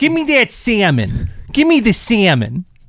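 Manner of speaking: very high, swooping put-on Seattle accent. Talking about a Northwest actor's accent, demonstrate a Seattle accent impression. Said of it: "they talk like they're from Seattle".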